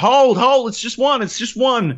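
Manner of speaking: acted-out yell. Retelling pointing a gun at a zombie at the top of the stairs, retelling a yell. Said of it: "And I'm yelling like".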